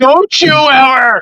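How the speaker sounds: very high-pitched, furious, out-of-control outburst. Retelling a match, the speaker acts out a woman defending her mom: imitating someone losing it. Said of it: "Like she was losing it".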